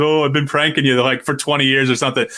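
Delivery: ordinary delivery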